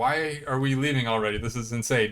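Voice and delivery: ordinary delivery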